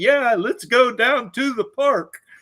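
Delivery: put-on, loud, very high old man voice. Retelling a cartoon translator's line: imitating an old man's voice. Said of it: "the only setting on it they decided was the old man setting".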